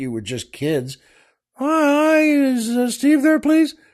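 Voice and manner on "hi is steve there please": put-on very high, slow childlike voice. Imitating kids calling on the phone: imitating kids' higher-pitched voices. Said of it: "the voices are higher pitched".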